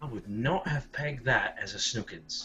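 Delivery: low muttering under the breath. A character reacts to a voice heard behind a door, muttered under his breath. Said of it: "under his breath".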